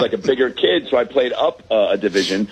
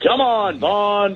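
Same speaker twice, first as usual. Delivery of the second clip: put-on weathered coach voice, raised pitch, calling out; 8 semitones higher than usual. Imitating the coach from Major League: imitating the coach from Major League. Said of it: "He sounded like the coach from Major League".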